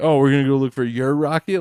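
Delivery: insincere, dry, sarcastic tone. Retelling an offer to go look for the rocket: imitating Matt sarcastically. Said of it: "all sarcastically".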